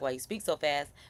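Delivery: ordinary talk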